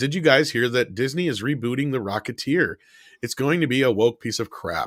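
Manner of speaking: ordinary talk, nothing marked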